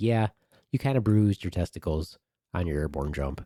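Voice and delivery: ordinary talk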